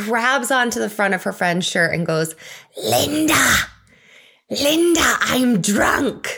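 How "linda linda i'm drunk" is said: mock whisper in full voice, much higher, slower. Retelling a stumbling woman grabbing her friend's shirt: imitating a full-voice would-be whisper. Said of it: "full voice, though I'm sure she thought she was whispering".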